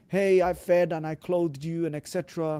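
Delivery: ordinary talk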